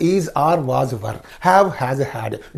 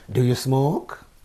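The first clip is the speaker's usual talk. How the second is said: question-like rising pitch on smoke; 4 dB quieter than usual. Demonstrating intonation on a yes-no question, rising intonation on smoke. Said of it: "Rising intonation".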